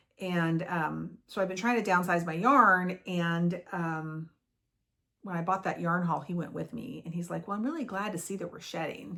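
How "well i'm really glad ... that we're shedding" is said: dry, totally sarcastic tone. Retelling what someone said on a yarn-buying trip: imitating sarcastic remark. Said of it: "being totally sarcastic".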